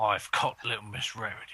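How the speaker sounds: put-on British accent. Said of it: "The British".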